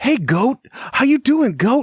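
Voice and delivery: spot-on, very high movie-star impersonation. Retelling a comedy skit of talking to farm animals: Mark Wahlberg impression. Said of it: "he sounds just like Mark Wahlberg".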